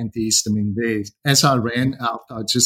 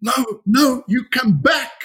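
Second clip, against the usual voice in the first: play-acted, very high, slow, drawn-out yell; 13 semitones higher than usual. Retelling what the cashier girl shouted: imitating someone shouting. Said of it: "was just shouting".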